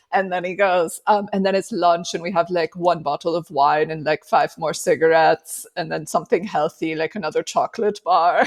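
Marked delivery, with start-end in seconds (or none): 1.3-8.4 ridiculous, made-up fake European accent. Retelling a comedy sketch about Europeans: ridiculous fake European accent. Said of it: "ridiculous accent that is no country".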